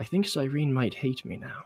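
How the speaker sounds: very quiet, hushed, mumbled mutter under the breath. Voicing a character looking toward the boat: muttering under breath in character. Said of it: "muttering under my breath".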